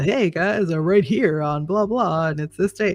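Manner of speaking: put-on classic old-school radio announcer patter. Showing how people opened a radio segment, in the old radio voice. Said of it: "the old radio voice".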